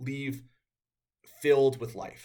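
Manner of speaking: tearful, choked-up, teary voice. Speaking about a close friend who leaves them filled with life, tearing up. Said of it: "I'm tearing up".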